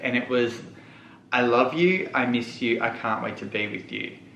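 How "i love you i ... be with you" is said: normal talking voice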